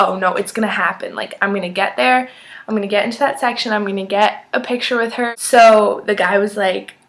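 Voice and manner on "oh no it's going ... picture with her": normal talking voice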